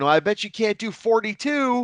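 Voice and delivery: put-on, high, shouted yell. Recalling staff carrying big stacks of tapes, retelling a yell. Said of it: "yelling at each other".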